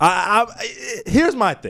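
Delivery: stammering, repeating I several times. Starting a reply after the other speaker finishes, stuttering. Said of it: "he got me stuttering and stuttering".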